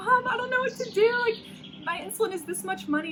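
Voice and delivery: very high, tearful, pleading crying, acted out. Retelling a phone call to Mom while alone in Atlanta, imitating own past crying. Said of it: "like crying".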